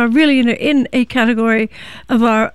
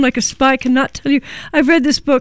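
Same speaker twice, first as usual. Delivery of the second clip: normal talking voice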